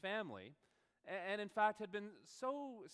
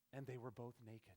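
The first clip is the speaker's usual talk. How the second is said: put-on sultry voice, lower and quieter; 7 semitones lower, 10 dB quieter than usual. Retelling a woman answering with a bible verse, in a mock-seductive voice. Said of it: "in her most seductive voice".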